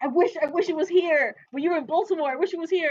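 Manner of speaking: loud, high-pitched angry outburst.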